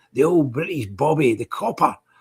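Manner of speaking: fake Cockney accent, slowed.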